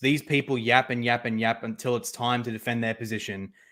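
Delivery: ordinary talk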